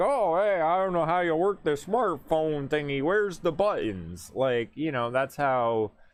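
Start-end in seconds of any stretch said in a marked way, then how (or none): 0.0-4.3 put-on pitched-up elderly person voice, played for laughs. Showing how people would mock an old person: mocking an old person. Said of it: "how you would mock an old person being like".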